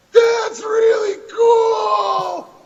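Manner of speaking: very high, slow, loud, over-the-top delighted gushing. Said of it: "I thought".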